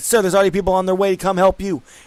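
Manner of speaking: fast, loud yell. Narrating a game scene, voicing a man who yells at the player's character, yelling. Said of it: "He kind of yells and like".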